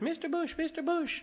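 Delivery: tiny, very high, slow little calling holler. Picturing a woman calling to him one day on streets of gold, in a small hollering voice. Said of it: "this little voice hollering".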